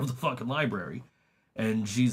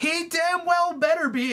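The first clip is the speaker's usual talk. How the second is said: very high-pitched, loud yelling; 4 dB louder than usual. Retelling how a mom answered the phone: imitating a mom yelling. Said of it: "And then she just yells".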